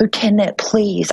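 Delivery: put-on tearful crying voice. Retelling begging a lieutenant for help, imitating a crying plea. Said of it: "And I started crying".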